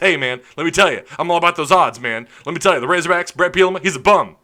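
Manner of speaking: loud, rapid-fire sports radio caller rant. Imitating a radio show caller: imitating Michael from Stuttgart, talking fast. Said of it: "He talks really fast".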